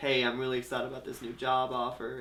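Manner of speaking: play-acted lifeless, flat, depressed monotone drone. Imitating how he talked in the flashbacks: mock-depressed monotone. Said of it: "the depressed, very monotone".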